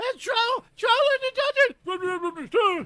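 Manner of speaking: high, slow, panicked mumble. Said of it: "comes in freaking out and starts mumbling".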